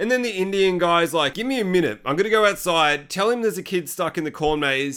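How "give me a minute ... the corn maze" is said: ordinary delivery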